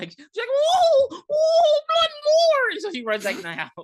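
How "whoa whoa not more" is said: high, loud scream. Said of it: "And she just screamed".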